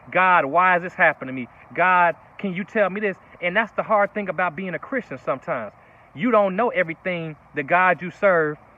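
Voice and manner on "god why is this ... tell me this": plain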